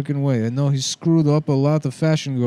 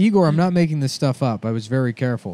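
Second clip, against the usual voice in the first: normal talking voice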